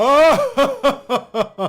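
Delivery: high, loud bellowing cry.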